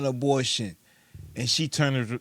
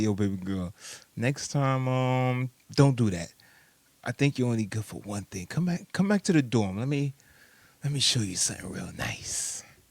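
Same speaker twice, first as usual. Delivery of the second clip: put-on man's voice, slower. Making a point about women by acting out what a guy would say, imitating one of the dudes. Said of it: "If I was one of the dudes, I'd be like".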